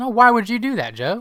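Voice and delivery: disappointed, reproachful tone. Retelling how a debate moderator questioned a candidate: imitating a disappointed moderator. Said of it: "It was just a straight up disappointment".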